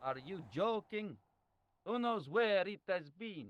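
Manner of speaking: put-on Italian accent. A character answers a request to shake hands, in an Italian-like accent. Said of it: "he has like an Italian-like accent".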